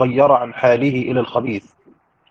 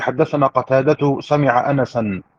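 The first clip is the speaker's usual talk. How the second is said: normal talking voice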